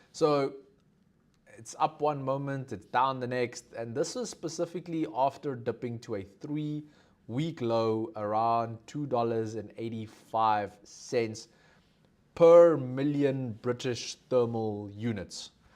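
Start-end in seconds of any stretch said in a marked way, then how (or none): 7.6-15.4 slightly slow, careful delivery. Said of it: "I always have to say it a little slowly".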